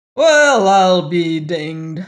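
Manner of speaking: loud, booming, throaty exclamation. A man entering a lift greets a woman he recognizes, booming and throaty. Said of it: "boomed a throaty voice".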